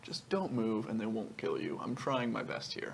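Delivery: sly, very quiet half-whisper, close to the ear. Playing a character who half-whispers a warning to a creature: sly half-whisper. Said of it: "try to whisper it as slyly as possible".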